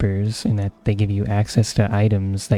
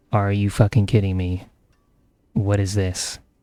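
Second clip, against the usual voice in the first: mock grumbling, muttered under the breath. Speaker acts out what they say after each teleport to town: mock grumbling under breath. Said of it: "I grumble under my breath every time".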